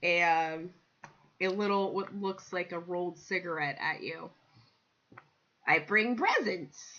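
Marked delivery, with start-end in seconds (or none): 5.7-7.0 put-on cat-folk voice. Voicing a tabaxi character offering a gift: Khajiit voice. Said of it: "I gotta get my Khajiit voice".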